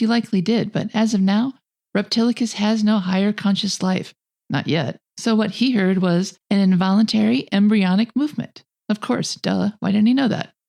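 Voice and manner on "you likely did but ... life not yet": normal talking voice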